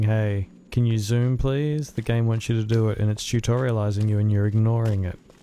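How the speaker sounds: ordinary delivery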